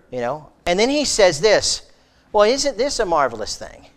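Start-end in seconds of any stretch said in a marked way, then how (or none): 2.3-3.6 dripping sarcasm, fake amazement, pitched-up voice. Retelling what a man said to people angry at him: retelling a sarcastic remark. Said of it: "you could almost detect the sarcasm in his mouth".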